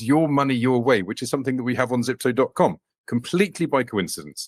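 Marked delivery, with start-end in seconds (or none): none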